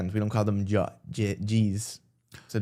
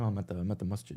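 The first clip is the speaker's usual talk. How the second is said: quiet, hushed half-whisper under the breath, kept soft; 8 dB quieter than usual. Retelling a phone call to mom from the masjid: imitating own half-whisper. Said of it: "I was whispering and she's like".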